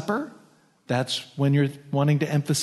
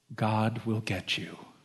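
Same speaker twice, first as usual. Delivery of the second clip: mock-angelic voice, much quieter, lower; 5 semitones lower, 7 dB quieter than usual. Retelling what she said to her mother, imitating her most angelic voice. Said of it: "in her most angelic voice said".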